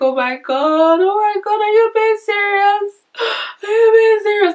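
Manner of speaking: acted crying voice. Retelling the phone call offering them the job, imitating own crying. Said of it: "I started crying".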